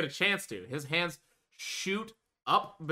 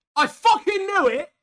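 loud, high, shrill, booming put-on British accent; 11 dB louder than usual. Retelling how Amir looked you in the face and said this, British accent like Cleo's. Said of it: "pulls on a British accent as close to Cleo's as possible".

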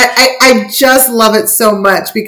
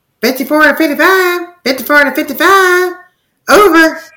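put-on woman's radio-style voice, higher pitch; 7 semitones higher than usual. Retelling a film scene where she radios in: imitating a film's female character on radio. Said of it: "there's the scene where she's like".

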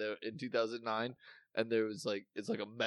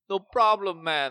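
very loud, heavy put-on Jamaican accent, pitched up; 9 semitones higher, 11 dB louder than usual. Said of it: "talking in a Jamaican accent, like".

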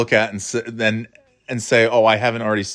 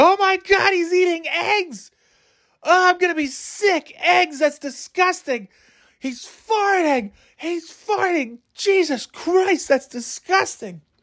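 mock screaming, very high and shrill. Walking alone in Central Park, speaker retells screaming with nobody near. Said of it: "i'm just screaming this into the void".

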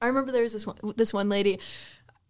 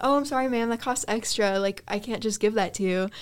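normal talking voice

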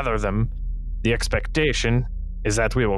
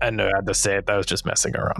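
usual speaking voice

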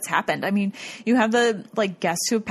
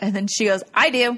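plain

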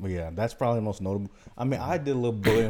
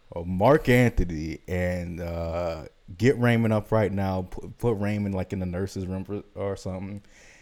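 ordinary talk, nothing marked

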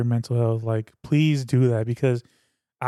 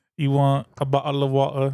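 stock English accent attempt. Trying to do the rest of the podcast in an English accent. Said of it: "That's all I could do".

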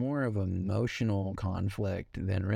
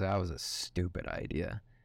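imitated mumble to self, slower; 2 semitones lower, 4 dB quieter than usual. Retelling what a man said after hanging up with his wife, mimicking him mumbling to himself. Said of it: "he just mumbles to himself".

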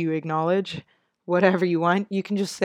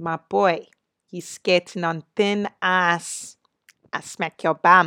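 put-on South African accent. Showing off the accents she has been working on, South African mom accent. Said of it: "here's the Santan mom too".

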